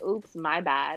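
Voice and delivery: snide, insincere, sarcastic throwaway tone. Retelling how a stranger apologized after shoving: imitating a sarcastic apology. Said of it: "very sarcastically".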